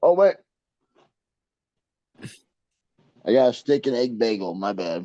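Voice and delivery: talking with mouth full. Answering a question about breakfast, talking with mouth full. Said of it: "I got something in my mouth right now".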